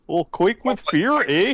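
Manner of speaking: put-on Canadian accent, laid on throughout. Asked to say a title in a canadian accent, the speaker tries: canadian accent. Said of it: "but it's a Canadian accent".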